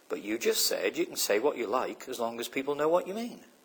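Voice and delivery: put-on, perfectly calm, soft, unruffled tone. Retelling how a woman answered an upset man, retelling her very calm reply. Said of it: "she just very calmly said".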